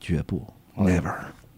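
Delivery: mock-feeble fragile voice. Retelling a scene where a character in tears answers: imitating a weak, fragile voice. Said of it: "用声就虚弱、非常脆弱的声音说".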